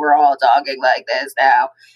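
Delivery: low, flat robotic voice-box drone.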